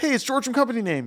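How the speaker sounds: high, rushed, anxious and overeager excited voice. Showing a common phone-greeting mistake: mock overexcited, anxious greeting. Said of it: "We're so excited or maybe just anxious".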